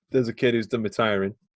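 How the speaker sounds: ordinary delivery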